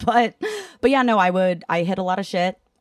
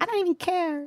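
put-on very high, babyish little-kid voice; 11 semitones higher, 6 dB quieter than usual. Retelling own past words about not going to court: baby voice. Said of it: "Baby voice".

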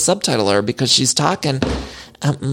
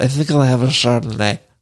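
put-on slurring voice; 2 semitones lower than usual. Showing the vibe of every sentence Meredith Marks says: Meredith Marks impression. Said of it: "has got the vibe of".

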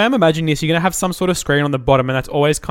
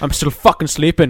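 put-on robotic voice, Irish accent. Acting out an imagined robot woken up by its owner: grumpy Irish robot voice. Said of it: "an Irish robot".

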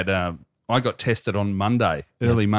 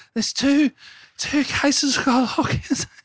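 put-on scared voice, pitched much higher. Mocking the WA premier's Friday announcement, scaredy-cat voice as Mark McGowan. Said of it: "scaredy cat voice".

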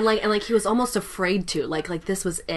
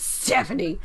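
genuinely angry tone. Moving on from Stephanie, saying her name forever after in an angry voice. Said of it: "say that in a really angry voice".

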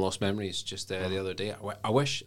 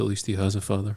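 sly, snide, sarcastic aside, tossed off; 5 dB louder than usual. Muttering a jab in character during a game scene: under his breath. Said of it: "under his breath".

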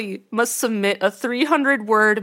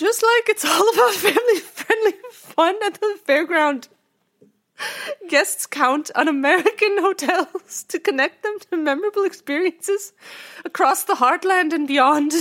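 put-on hazy, mixed half-British, half-Irish accent; 8 semitones higher than usual. Reading out a hotel brand leader's quote, in a vague British-Irish accent as Clem Benz. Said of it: "He was like vaguely British and or Irish".

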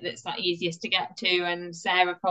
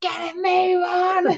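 put-on scream, higher and louder; 12 semitones higher, 6 dB louder than usual. Retelling how dad screamed from the back during the race: imitating someone screaming. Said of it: "he just absolutely screamed at me".

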